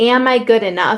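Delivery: ordinary talk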